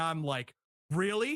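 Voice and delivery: ordinary talk, nothing marked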